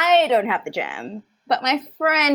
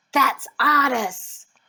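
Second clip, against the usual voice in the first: whispering. Speaking in character as a door creaks open, whispering. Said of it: "And I whisper".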